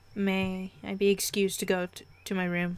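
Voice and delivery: ordinary talk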